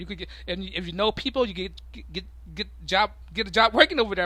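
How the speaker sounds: stammering speech. Explaining how to get a job working over there, stuttering. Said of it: "I'm stuttering".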